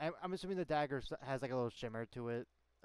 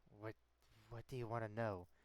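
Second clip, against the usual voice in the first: low, hushed, half-whispering tone; 4 semitones lower, 7 dB quieter than usual. Voicing Mystic answering a threatening question: half-whispering in character. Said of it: "Mystic says in, like, a, uh, whispering tone".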